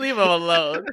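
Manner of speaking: fake pleading voice.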